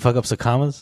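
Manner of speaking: normal talking voice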